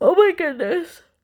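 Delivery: very high, loud exclamation spoken through a yawn. Late at night explaining a color choice, a held-back sneeze becomes yawning. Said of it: "It turned into a yawn".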